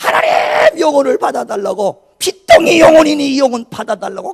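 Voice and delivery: high, loud, fervent, earnest crying out. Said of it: "간절히 소리치며 기도합니다".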